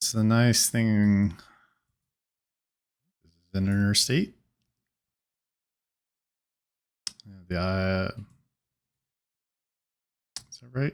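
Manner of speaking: low, quiet speaking voice. Checking with someone whether they are on the interstate, talking low. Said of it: "I'm talking so low".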